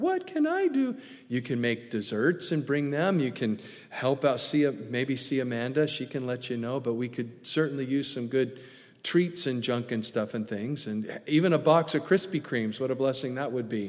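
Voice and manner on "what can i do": eager, very high-pitched. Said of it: "you'll say it just like that".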